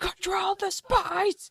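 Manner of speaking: shrill, booming, very loud high-pitched shout. Mocking the other speaker for shouting into the mic, mock shouting. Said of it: "stop shouting".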